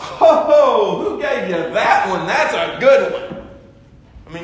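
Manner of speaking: slow sarcastic drawl. Speaking to an audience, paraphrasing a quoted reply: retelling a sarcastic remark. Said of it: "this is a little bit of sarcasm here".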